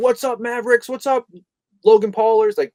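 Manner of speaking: belted out loudly at a high pitch. Contrasting an old-style YouTube intro: Logan Paul impression. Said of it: "It's not the Logan Paul".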